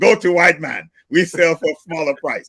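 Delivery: put-on blended Russian and German accent. Quoting people who tell him where to spend his money: Russian-German accent. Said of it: "cross between a Russian and German accent".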